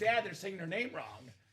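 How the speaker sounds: plain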